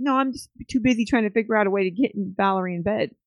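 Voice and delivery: normal talking voice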